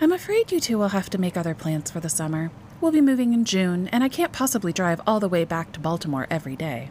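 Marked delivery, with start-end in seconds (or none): none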